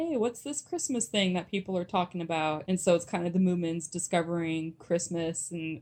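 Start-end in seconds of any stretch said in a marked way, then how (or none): none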